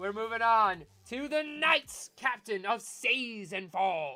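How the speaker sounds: put-on pirate accent, slow and drawn out. Host moving on to the next awards category, pirate accent. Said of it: "I don't know why I said that in a pirate's accent".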